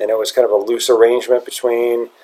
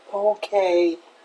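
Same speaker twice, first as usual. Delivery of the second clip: put-on cute, soft, high-pitched three-year-old voice; 7 semitones higher, 8 dB quieter than usual. Retelling how he answers when reprimanded: imitating a cute little three-year-old voice. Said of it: "It's a cute little three-year-old voice".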